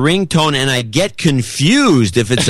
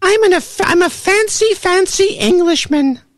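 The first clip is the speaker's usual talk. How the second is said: put-on effeminate voice, pitched much higher. In a comedy bit about someone's effeminate voice: effeminate voice. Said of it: "using your effeminate voice".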